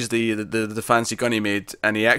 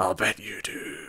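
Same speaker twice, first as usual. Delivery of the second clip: soft, quiet, slow and gruff voice; 9 dB quieter than usual. Recapping a show scene where Mick answers her lie, in Mick's gruff voice. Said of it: "his his gruff voice".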